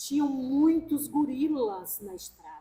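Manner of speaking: tearful words spoken through hard sobbing. Retelling a daughter explaining her nightmare: imitating someone crying hard. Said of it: "ela chorando muito".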